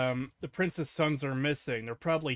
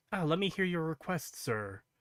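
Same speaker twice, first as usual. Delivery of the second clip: gentle, soft, quiet, soft-spoken delivery; 3 semitones higher, 3 dB quieter than usual. Describing how a character talks, imitating him soft-spoken.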